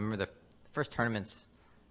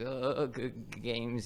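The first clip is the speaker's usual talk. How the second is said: acted nervous stammering, words barely getting out; 4 semitones higher than usual. Retelling what a shaking tournament opponent said: imitating nervous stuttering. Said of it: "He was, like, stuttering".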